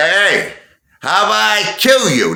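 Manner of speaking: mock very high, slow, drawn-out loud shouting. Retelling a guy's threat at the roulette table: imitating a loud threat. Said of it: "he said it really loud".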